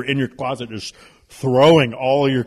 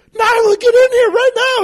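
very high, loud, shrill scream; 7 dB louder than usual. Retelling how his wife called the daughter into the bathroom: imitating someone screaming. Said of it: "She's screaming at Nyla".

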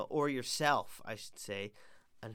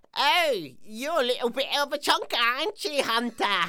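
silly, dumb schoolboy put-on English accent; 11 semitones higher, 12 dB louder than usual. Retelling what Bryn would say while kicking a ball around, imitating Bryn's little stupid accent. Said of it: "in his little stupid accent".

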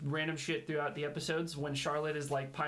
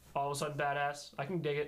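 normal talking voice

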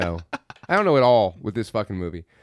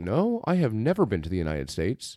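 strong, very American fake put-on accent; 3 semitones lower, 6 dB quieter than usual. Retelling a movie character checking into the united states: put-on american accent. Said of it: "with my very American accent".

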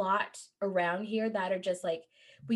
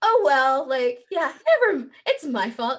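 mock talking, half laughing through the words; 5 semitones higher, 8 dB louder than usual. Retelling a movie scene, imitating Nanny Maureen: laughing while talking. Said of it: "kind of, like, laughing".

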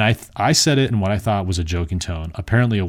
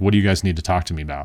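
defiant, contrarian tone of voice. Retelling questioning two police officers in class: imitating own contrarian tone. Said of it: "asked them in that tone".

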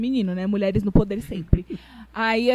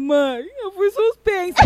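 put-on half-sob, very high, slow, drawn out; 9 semitones higher than usual. Retelling what she said to her mother back then, retelling half-crying. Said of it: "meio que chorando".

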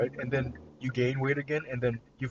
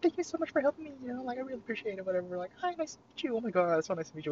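put-on, very high, overly eager customer-service voice; 11 semitones higher than usual. Imitating how a man talks to the speaker: put-on customer service voice. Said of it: "this customer service voice".

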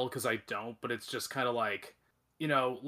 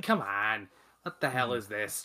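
fake Quebec French accent. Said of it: "I can see Denis Villeneuve and Quebecois going".

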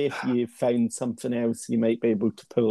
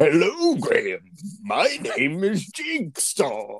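jolly, swooping sing-song voice, pitched up; 5 semitones higher than usual. Playing Jigsaw speaking to Graham, the speaker ends up doing a Santa voice. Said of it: "I don't know why I sound like Santa".

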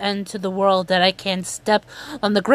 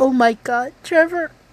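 crying while talking, much higher; 5 semitones higher than usual. Reporting a wrestler's news on a show; crying while talking. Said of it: "I'm sorry I'm crying about this".

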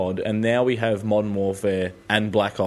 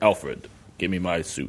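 slow, deliberate superhero voice, each word drawn out; 3 semitones lower, 3 dB quieter than usual. Correcting another speaker on how the character sounds, doing Batman voice. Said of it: "He sounds like".

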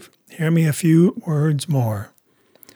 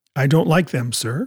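plain

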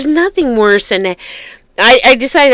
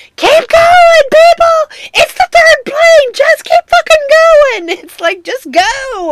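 very high-pitched loud yelling; 4 dB louder than usual. Retelling what the speaker yelled at people on the tarmac: retelling a yell. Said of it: "And I'm yelling like".

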